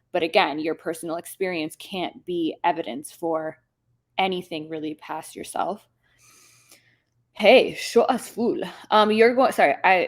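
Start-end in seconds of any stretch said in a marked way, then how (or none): 7.3-8.6 put-on Middle Eastern accent, louder. Reading out a name from chat: Middle Eastern accent. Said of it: "read those in an accent is because my parents are Middle Eastern".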